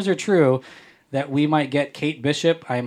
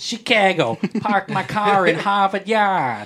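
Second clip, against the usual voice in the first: put-on Chicago local pronunciation of "Chicago"; 6 semitones higher, 3 dB louder than usual. Showing how to say a city name: Chicago accent. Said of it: "in a Chicago accent".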